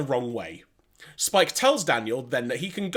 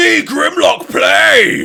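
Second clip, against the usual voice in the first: very high, loud shout, belted out; 11 semitones higher, 12 dB louder than usual. Quoting a character's line from the episode: Grimlock voice. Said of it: "no more Grimlock voice for you".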